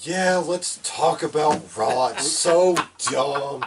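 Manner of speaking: loud, exaggerated, fed-up, overdramatic boredom. Acting out a co-host's feelings about the weekly show: overly dramatic impression of Rod's boredom. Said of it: "overly dramatic recreation of how Rod feels".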